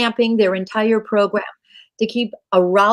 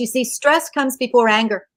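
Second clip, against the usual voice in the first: ordinary talk, nothing marked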